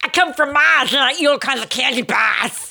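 put-on Boston accent with the R's dropped. Quoting a candy-bar commercial's Martian, in a Boston accent. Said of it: "capitalize on the Boston accent".

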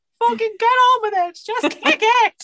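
high, loud, shouted put-on Irish accent.

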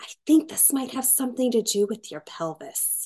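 hushed whisper. Retelling what a woman said while working up the speaker's leg, whispered. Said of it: "she kind of in a whispered voice said".

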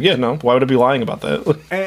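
put-on dry, deadpan, dead serious tone. The speaker quotes a man who usually laughs at outlandish claims, imitating a deadpan reply. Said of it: "But he was like deadpan".

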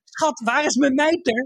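high, hurried, flustered shout.

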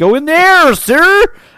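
fake American accent, very high-pitched. Suggesting a man put on an american accent, put-on american accent. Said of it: "You could put on a bit of an American accent".

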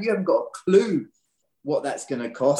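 ordinary talk, nothing marked

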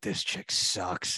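whispered voice. Retelling what the speaker and a friend whispered to each other, retelling a whisper. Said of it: "Cal Ke- Ke- and I were whispering to each other".

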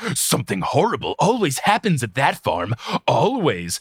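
play-acted dark, foreboding, ominous tone. Retelling a man's warning, lantern held under his face, mock-ominous voice. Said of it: "in a very ominous voice".

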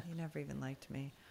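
put-on emotionless, matter-of-fact, flat deadpan delivery. Recounting how he reacts and delivers a line: imitating a deadpan delivery. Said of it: "he says it like deadpan".

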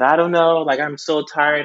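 acted-out words spoken through tears, crying. Retelling a phone call to dad, imitating own past crying. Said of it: "I called my dad and I was crying".

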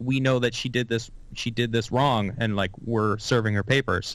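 ordinary talk, nothing marked

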